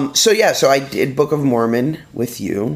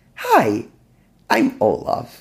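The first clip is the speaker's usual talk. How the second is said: innocent, sing-song character voice with swooping pitch. Giving a hint about a role based on a friend: Olaf voice. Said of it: "I'll give you a hint".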